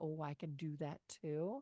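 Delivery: normal talking voice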